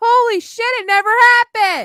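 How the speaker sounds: very high, blurted shout. Telling a story about a mother whose son was traumatized, yelling. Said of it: "Sorry for yelling".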